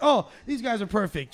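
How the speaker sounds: ordinary delivery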